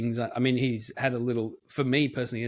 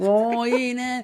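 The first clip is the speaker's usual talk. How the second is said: put-on broad Australian accent, higher and louder; 13 semitones higher, 6 dB louder than usual. Mocking how film characters talk: over-the-top Australian accent like Chris Hemsworth. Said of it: "they've made every single character go".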